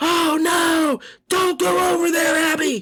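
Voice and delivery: whispered shout. Imitating the voice audiobook narrators use when a character yells: whisper yell. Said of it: "It's a sort of a whisper yell".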